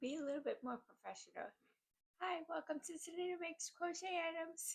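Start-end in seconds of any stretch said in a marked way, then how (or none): 2.2-4.8 giddy, high-pitched, barely contained delivery. Restarting the show intro, the host greets listeners, too giddy. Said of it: "I'm just too giddy".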